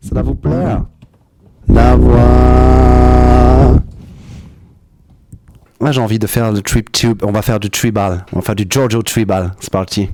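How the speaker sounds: super deep, loud voice. Speaker trying out a voice tool for the audience: very deep voice. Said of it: "j'ai la voix super grave".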